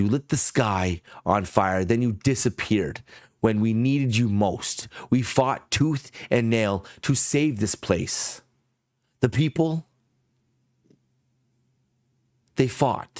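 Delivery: shaky, trembling voice quavering on every breath. Voicing a character accusing the players of vanishing: shaky voice. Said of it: "Her breath is shaky as, as much as her voice".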